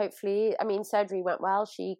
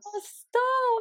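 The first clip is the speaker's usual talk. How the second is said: very high, emotional, touched voice. Praised by a sister on their podcast, the speaker gets emotional. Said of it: "You're gonna make me actually emotional".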